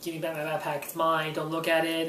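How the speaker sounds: ordinary delivery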